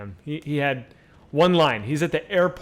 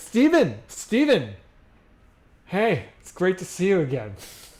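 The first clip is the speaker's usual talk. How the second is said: put-on drunk, tipsy, overfamiliar delivery, pitched up; 5 semitones higher than usual. Retelling how a drunk man greeted Steven Spielberg: imitating Kyle drunk. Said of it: "Kyle's kind of drunk".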